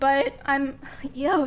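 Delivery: voice cracking and breaking on the words. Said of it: "sorry, voice crack".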